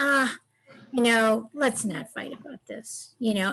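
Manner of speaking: very slow, low, deep, easygoing drawl. Showing how the speaker soothes a partner who gets mad, in a very slow, low voice. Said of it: "in a very slow and low tone of voice".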